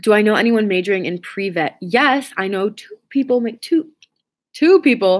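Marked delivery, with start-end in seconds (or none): 3.4-5.2 cracked voice, breaking mid-phrase. Answering a question about knowing pre-vet majors: voice cracking. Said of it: "my voice cracked".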